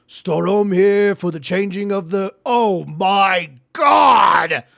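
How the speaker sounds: shouting. Voicing a guard who arrives and sees something: guard yelling. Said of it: "he yells out".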